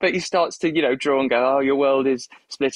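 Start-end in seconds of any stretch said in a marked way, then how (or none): 1.6-2.8 put-on near-British accent. Retelling what a man says as he starts to draw, in an almost British accent. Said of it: "adopts an almost British accent".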